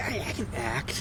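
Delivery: mock wannabe-actor voice, soft, slow, proud.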